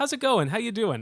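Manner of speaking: nervous voice jumping way up in pitch. Greeting a newly introduced guest on the show, voice pitched way up. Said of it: "my voice just went up seventeen octaves".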